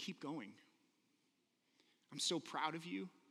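mock whispering. Retelling words the speaker heard their dad whispering; retelling a whisper. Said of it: "I heard him just whispering".

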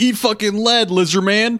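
very loud, very high, shrill yell. Saul pops up at a creature behind the wall, yelling. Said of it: "pop up and yell".

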